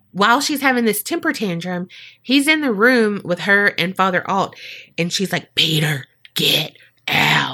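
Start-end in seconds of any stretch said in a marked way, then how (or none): 5.5-7.5 low, sultry, seductive, sexy voice. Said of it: "She used her sexy voice".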